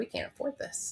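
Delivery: mock breathy, hushed, tearful crying near-whisper. Telling of learning the price was not cheap, re-enacting bawling. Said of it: "And I'm bawling".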